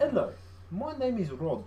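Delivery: put-on slow South African accent. Remembering a man named Rod, the speaker is imitating Rod's accent. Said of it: "I do like doing that accent".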